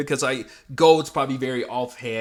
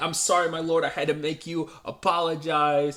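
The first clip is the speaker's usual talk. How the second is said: higher, put-on apologetic voice; 4 semitones higher than usual. Retelling an anime episode where Nemumu says sorry: imitating Nemumu apologizing. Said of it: "she's so, like, apologetic".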